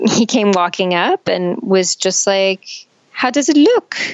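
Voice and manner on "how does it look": put-on heavy, thick French accent, pitched up. Retelling what a man asked her when he walked up, in his thick French accent. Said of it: "in his thick french accent".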